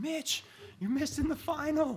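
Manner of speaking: put-on very high, urgent scream of alarm. Retelling how she ran into the house to wake him, retelling a scream. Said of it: "she's screaming".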